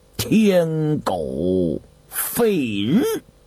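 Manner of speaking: very slow, each word spaced apart. Pressed by the others to reveal the phrase, a character answers word by word. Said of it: "一字一顿地答道".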